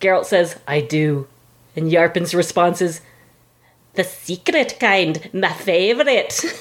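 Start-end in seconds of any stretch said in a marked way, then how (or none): 3.9-6.4 bad Scottish accent, slow and drawn out. Retelling Yarpin's answer to Geralt, in a bad Scottish Yarpin impression. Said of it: "a really bad Scottish impression".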